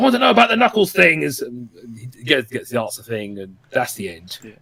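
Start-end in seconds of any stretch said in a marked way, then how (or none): 0.0-1.2 high, fast, demanding, rattled-off speech. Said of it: "Moraine still was like".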